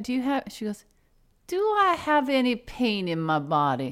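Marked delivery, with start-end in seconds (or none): 1.5-3.9 put-on slow, swooping Cajun accent. Retelling Maxine's answer when asked about pain, imitating Maxine's Cajun accent. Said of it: "I know you don't think I do a Cajun, a good accent".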